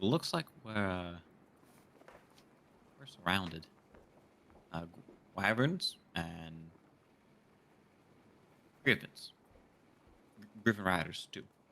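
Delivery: low, kept-down voice. Voicing a character who tells the captain they are surrounded: low voice. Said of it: "still in a low voice".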